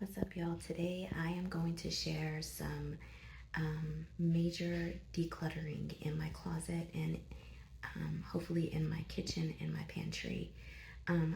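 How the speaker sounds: whispered, hushed and very soft. Recording a video intro while at the doctor's office: whispering. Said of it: "I'm whispering because I'm at the doctor's office".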